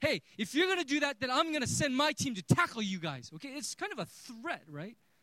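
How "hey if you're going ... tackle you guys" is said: loud, angry, mock-threatening coach-style yell. Retelling how the other coach yelled a threat at our team, retelling a coach's angry yell. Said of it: "He starts yelling, and then he yells at our team saying".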